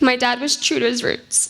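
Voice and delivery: tearful, words pushed out while crying. Speaker telling stories about their dad, crying while speaking. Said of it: "I don't know why I'm crying at this part".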